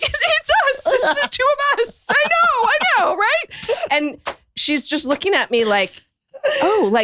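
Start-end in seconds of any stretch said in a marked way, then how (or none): 0.0-3.8 put-on very high voice, laughing hysterically through giggles. Retelling answering a stranger's question about the podcast: imitating own hysterical laughing. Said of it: "just hysterically laughing".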